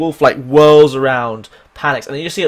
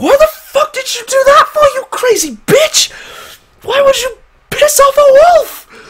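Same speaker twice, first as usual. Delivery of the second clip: put-on angry voice, much higher, louder; 4 dB louder than usual. Narrating a scene where the character Bark reacts, acting out Bark's angry outburst. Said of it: "Bark's like".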